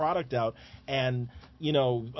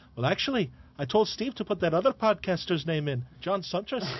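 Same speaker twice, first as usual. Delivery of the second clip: put-on Scottish accent, pitched up; 5 semitones higher than usual. Retelling how Miller answered whose idea the mic flag was, imitating Miller's Scottish accent. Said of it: "in that great Scottish accent".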